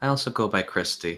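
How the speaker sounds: normal talking voice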